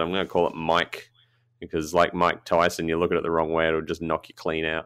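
ordinary delivery

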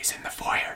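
hushed. Describing a movie scene, voicing the guard's reply to the king, said quietly. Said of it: "the guard quietly says".

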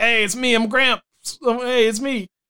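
slow, high, stretched-out delivery. Retelling Grandpa's TV commercials: imitating Grandpa Munster. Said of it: "he would just show up in commercials like".

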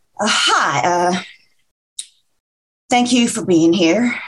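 nervous, anxious tone. Libby, facing the guests who squeezed in, starts her speech nervous. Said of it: "Wow, I'm nervous".

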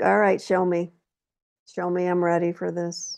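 plain

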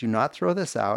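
ordinary talk

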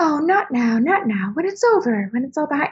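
very romantic delivery. Comparing two film versions, the speaker retells a romantic line reading. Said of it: "she says it very like romantic".

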